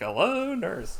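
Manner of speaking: high-pitched cartoony character voice. Retelling a film scene where he greets a lady: Animaniacs 'Hello nurse' voice. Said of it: "Turns into, like, Animaniacs".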